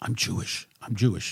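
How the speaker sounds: put-on quiet speaking. Retelling what a building worker said on the way out: imitating someone speaking quietly. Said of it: "quietly, he said".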